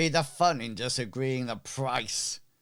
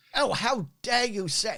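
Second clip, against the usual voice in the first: flustered, indignant merchant voice, higher pitch; 9 semitones higher than usual. Voicing a merchant who takes offence: flustered merchant voice. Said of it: "the merchant gets quite flustered".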